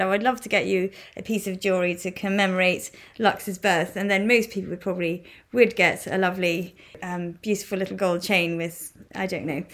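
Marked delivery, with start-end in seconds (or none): none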